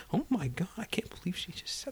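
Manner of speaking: scandalized, hushed, breathy whisper. Retelling theater audience members turning to each other after a gasp, imitating murmuring. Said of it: "they sort of turned to each other and were murmuring".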